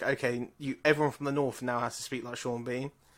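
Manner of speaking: normal talking voice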